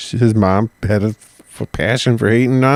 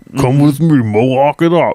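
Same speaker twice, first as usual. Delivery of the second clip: put-on deep Russian accent; 3 semitones higher than usual. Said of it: "That's a deep Russian accent".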